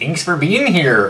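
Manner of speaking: put-on Irish brogue. Speaker thanks listeners for being here, irish accent. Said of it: "That was my uh, Saint Patrick's Day".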